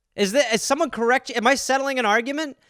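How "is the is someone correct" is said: ordinary delivery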